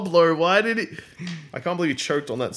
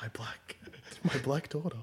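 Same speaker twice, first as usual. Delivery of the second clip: whispering, much quieter; 15 dB quieter than usual. Voicing a character in a shared story, whispering. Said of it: "I whisper".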